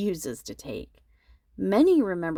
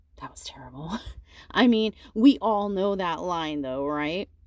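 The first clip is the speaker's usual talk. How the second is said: normal talking voice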